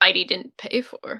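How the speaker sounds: mumbled under breath. A character mutters a remark after the guard speaks: mumbled under her breath. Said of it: "Raina just mumbles that under her breath".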